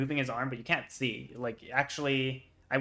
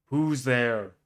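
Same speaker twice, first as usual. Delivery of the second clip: big, loud, booming voice; 6 dB louder than usual. Game master voicing a voice the players hear as they stop: loud booming voice. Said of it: "kind of booming voice go".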